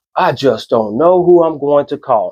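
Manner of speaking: ordinary talk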